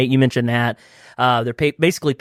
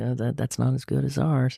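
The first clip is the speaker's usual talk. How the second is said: soft, hushed whisper. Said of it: "you're just, like, whispering to 'em".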